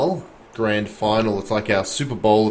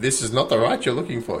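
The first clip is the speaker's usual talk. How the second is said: botched wise alien voice with Australian accent. Play a GPS with a downloaded voice, in a terrible Yoda voice. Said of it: "That was my worst Yoda voice".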